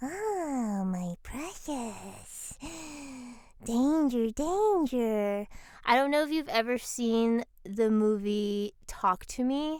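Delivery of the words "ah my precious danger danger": eerie, ethereal, high-pitched little imp voice. Showing an audition voice for an eerie, ethereal little imp: eerie high-pitched little imp voice. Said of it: "kind of like an eerie but ethereal, uh, little imp".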